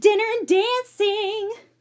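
eager, excited exclaiming, very high. Cora cheers about the plans for tonight, an excited exclamation. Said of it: "Cora exclaimed excitedly".

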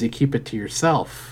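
ordinary talk, nothing marked

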